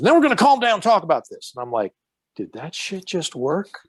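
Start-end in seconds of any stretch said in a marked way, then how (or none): 0.0-1.5 put-on very high, quick, rattled-off Southern accent. Retelling how the man holding the gun repeated his words, in a southern accent. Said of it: "doing that Southern accent".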